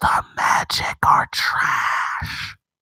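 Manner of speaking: slow, drawn-out, ASMR-style whisper. Giving the Magic an ASMR-style message, whispered. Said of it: "So I whisper it just, just one more time".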